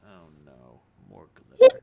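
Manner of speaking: deep, low, booming character voice. During the game, Kabuto's voice escapes the player's character, Kabuto's voice. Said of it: "Kabuto's voice escapes his lips as he says".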